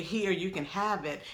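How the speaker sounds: usual speaking voice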